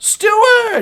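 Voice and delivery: loud, high yelling. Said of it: "she yells".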